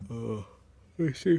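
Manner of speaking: soft words spoken mid-yawn. Talking viewers through vehicle lights after getting up early: yawning. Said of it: "Sorry for the yawning".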